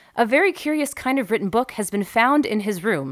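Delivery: ordinary delivery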